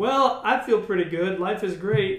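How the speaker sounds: ordinary talk, nothing marked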